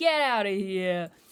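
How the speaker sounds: sudden put-on New York accent. Reading a line from the text aloud, in a New York accent. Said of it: "Why I went into a New York accent".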